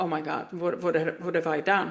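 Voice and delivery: put-on panicked, stammering, stumbling, alarmed dismay. Retelling seeing police stop by the car, imitating her own panicked reaction. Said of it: "and my heart just sank".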